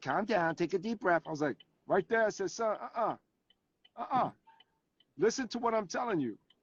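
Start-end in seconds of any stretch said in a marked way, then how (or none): 0.0-1.2 sarcastic, mocking copycat parroting tone. Retelling how the son copied a parent's words: imitating son's mocking mimicry. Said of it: "mimic me".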